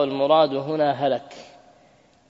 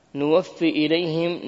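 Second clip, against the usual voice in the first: ordinary delivery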